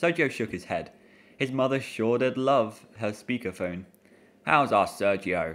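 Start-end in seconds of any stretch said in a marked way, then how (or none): 4.4-5.6 low, deep, dropped papa voice. Reading a story aloud, a father greeting his son on speakerphone: deep booming voice. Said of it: "a deep voice boomed".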